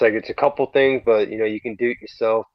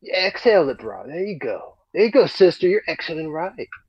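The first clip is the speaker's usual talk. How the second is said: crazy put-on stoner surfer dude voice, higher; 7 semitones higher than usual. Giving breathing instructions again: crazy stoner surfer dude voice. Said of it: "I could sound like a crazy stoner dude".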